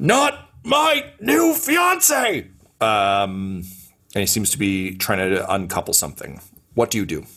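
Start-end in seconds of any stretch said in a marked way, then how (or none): 0.0-2.5 high, slow, drawn-out yell. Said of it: "you just hear him yelling".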